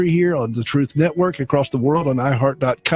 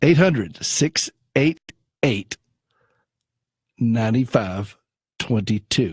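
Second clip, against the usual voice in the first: very slow, deliberate, spaced-out number reading; 3 semitones lower than usual. Speaker repeats a phone number, as his wife asked, very slowly. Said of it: "that's about as slow as I need to go".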